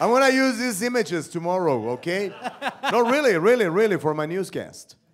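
loud, high-pitched, carrying call.

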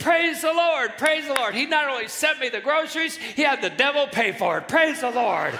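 put-on overjoyed, loud, high, jubilant shouting. Telling a story, speaker acts out an old lady praising the Lord, imitating excited praising. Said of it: "jumping up and down even more excited".

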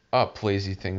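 plain

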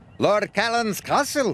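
proud tone. Narrator reading a story, one twin answers a question, proud announcement. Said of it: "Donald proudly announced".

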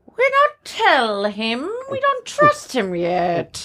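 high, swooping, crow-like cawing voice. In a role-play, answering a player asking what's in the potion: crow-like Dolores voice. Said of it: "She sounds like a crow".

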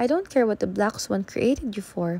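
ordinary delivery

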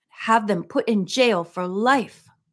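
ordinary delivery

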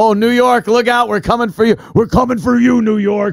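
raspy, gravelly put-on wrestler voice. Joking about a terrorist threat, doing a Macho Man impression. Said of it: "this Macho Man impression".

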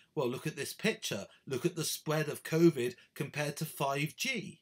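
plain

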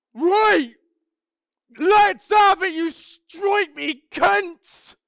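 booming bellow, very loud and very high. Speaker recalls standing tall to face a group before a fight: retelling a bellowed challenge. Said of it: "and I bellows".

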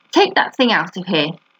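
plain

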